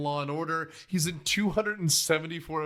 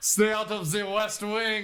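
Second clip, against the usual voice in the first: basic put-on French accent, higher pitched; 5 semitones higher than usual. Retelling a film scene: imitating Jerry Orbach's basic French accent. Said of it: "the most basic French accent".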